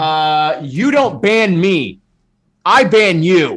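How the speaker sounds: very slow, deliberate, loud, drawn-out shout. Answering a joke about being banned for dance moves: shouting. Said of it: "Why is he shouting again?".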